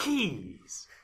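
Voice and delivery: slow, deliberate one-word delivery. Retelling a fan video scene, imitating Master Chief saying Keyes. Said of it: "that's how he says it".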